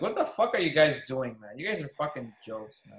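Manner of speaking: usual speaking voice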